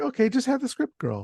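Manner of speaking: high-pitched, dismissive mock director voice. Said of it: "he's like".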